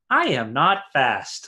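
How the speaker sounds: very dry, plain, matter-of-fact delivery. Leaning over the pit, the character speaks up: very matter-of-fact voice. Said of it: "very matter-of-fact voice".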